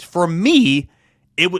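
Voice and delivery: loud, with the voice breaking and cracking. Asking college football fans a question, voice cracking. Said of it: "Did you hear my voice crack right there?".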